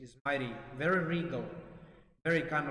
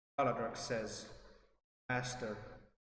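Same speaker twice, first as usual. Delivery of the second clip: usual speaking voice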